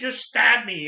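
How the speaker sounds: play-acted, furious, loud, angry shout. Recalling a childhood scene, quoting the father yelling at the mother, retelling angry yelling. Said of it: "he's just yelling at her".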